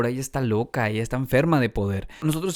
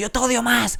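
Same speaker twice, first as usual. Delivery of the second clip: mock shrill, very high, loud shouted yell; 11 semitones higher, 4 dB louder than usual. Retelling a childhood fight with a brother: imitating brother yelling loudly. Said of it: "Mi hermano me gritaba bien fuerte".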